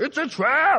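very high, urgent, squeaked voice. Repeating a warning line as if said by Admiral Ackbar: Admiral Ackbar voice. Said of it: "It's like Admiral Akbar showing up".

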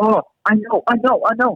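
put-on very high, cute little boy's Chinese accent. Retelling a boy on a tour blurting out an answer, cute Chinese accent. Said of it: "with his cute Chinese accent he goes".

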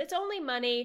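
ordinary talk, nothing marked

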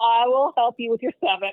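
ordinary talk

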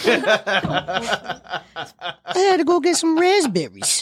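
high-pitched mock New Jersey girl accent. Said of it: "I expect her to be like".

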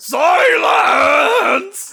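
shout sweeping up and down. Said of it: "ascends up and down the Beatles 3000 scale".

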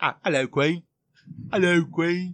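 put-on British accent. Taking turns trying out an accent, greeting in a fake British accent. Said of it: "Mine sounds just like yours".

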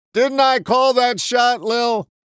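mock very high, loud, slow, carrying outdoor voice. Retelling how a man turned to the speaker's mother in company, imitating a loud outdoor voice. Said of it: "say in his outdoor voice".

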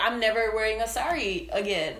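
normal talking voice

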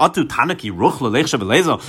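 ordinary talk, nothing marked

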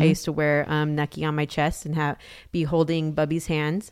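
ordinary delivery

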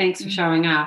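ordinary talk

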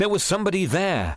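insisting tone. The first-person narrator speaks up to the others, insistent. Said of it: "I insisted".

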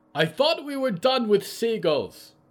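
very high, shrill yell. Polly calls to Mort from across the stony beach, shouting. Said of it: "Polly shouted from across the stony beach".

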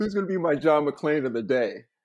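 laughing through the words.

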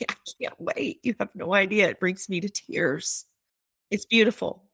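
emotional, close to tears. Interviewee speaking about a piece being created from her lifelong story, emotional, near tears. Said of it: "I can hear that in your voice coming through".

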